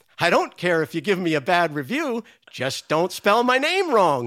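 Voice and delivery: playful, antic delivery as if into a mic. Retelling how an actress spoke into the mic: imitating an antic delivery. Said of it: "very antically into the mic".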